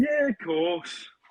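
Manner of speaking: put-on Scouse accent. Asked by friends to show a scouse accent, saying a requested line: scouse accent.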